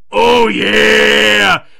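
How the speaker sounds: very loud, rough, belted, with "yeah" stretched out. Quoting a line from the show to Lance, in a Booker T impression. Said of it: "my oh, yeah sounded more like Otis".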